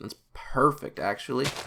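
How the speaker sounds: heavy, laid-on-thick, incredibly sarcastic delivery. As it gets dark outside and the speaker needs to get home, incredibly sarcastic. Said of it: "I was being incredibly sarcastic".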